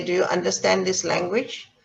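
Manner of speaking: plain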